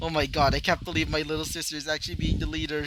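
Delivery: plain reading voice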